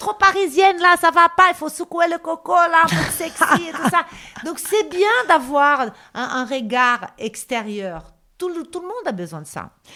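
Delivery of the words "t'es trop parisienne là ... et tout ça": put-on high, loud, Brazilian-accented voice. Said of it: "elle disait".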